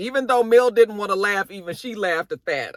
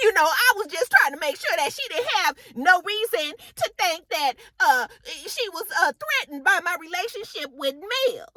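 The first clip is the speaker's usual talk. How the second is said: very high-pitched voice; 10 semitones higher than usual. Retelling what Kiki said when confronted, imitating Kiki's voice. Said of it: "Kiki's voice before, 'cause this is exactly how she said".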